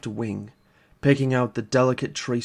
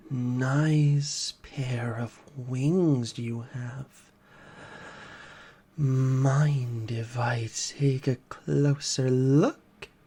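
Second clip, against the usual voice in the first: croaking creature voice, "nice" drawn out. Reading a story aloud, voice the hooded figure at the cage: croaking creature voice. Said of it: "The figure croaks".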